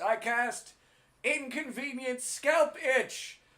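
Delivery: very loud, very high, very slow, drawn-out shriek. Acting out a wizard casting a spell in a wizard fight: screaming. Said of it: "he just goes up and screams".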